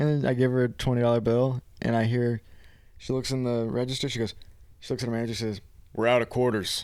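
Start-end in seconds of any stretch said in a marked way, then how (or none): 5.9-6.9 put-on deep manly voice. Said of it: "Turn into a man".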